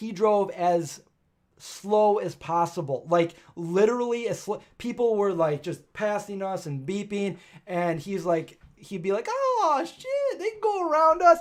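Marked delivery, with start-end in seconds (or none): 9.3-11.4 very high, loud, odd-sounding voice. Retelling what a slow-driving friend said as cars passed: imitating J P's way of talking. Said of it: "That's how he talked".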